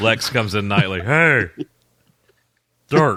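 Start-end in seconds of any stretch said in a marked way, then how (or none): 1.0-3.2 put-on slurred voice. Joking about a character called Dirk; slurring like Lex. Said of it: "like a slurred voice".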